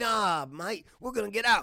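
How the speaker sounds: put-on high loud Australian accent. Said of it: "That's my British, or my Australian accent".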